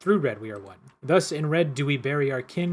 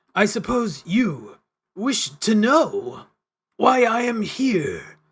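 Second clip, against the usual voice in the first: grating unearthly voice, high, very slow, odd stresses; 8 semitones higher, 4 dB louder than usual. Reading the man's line in a newly found voice: grating unearthly cadence. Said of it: "I got a voice for him".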